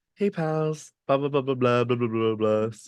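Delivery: bubbly, happy-go-lucky, crazy, wild happy babbling voice. Acting out how happy-go-lucky they usually are: imitating own super happy smiley manner. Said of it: "super happy and smiley".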